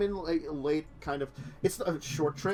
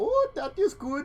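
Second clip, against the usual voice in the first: clumsy Dutch accent, very high; 11 semitones higher, 3 dB louder than usual. Asked for a best Dutch accent, trying one: bad Dutch accent. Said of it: "best Dutch accent".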